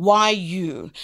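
plain

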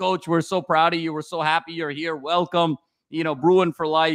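ordinary talk

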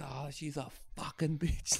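put-on high, slow, drunken ranting grumble of a man.

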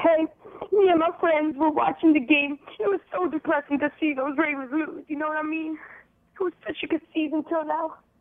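weepy, tearful voice, crying through the words. A sports radio caller talks to the host after the ravens lose, crying. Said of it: "Are you crying?".

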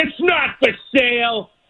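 high, slow scream. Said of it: "he screams at him".

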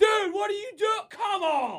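very high, loud yelling scream. Retelling venting in the car like yelling at a team: imitating his own yelling at drivers. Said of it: "like I'm screaming at my football team".

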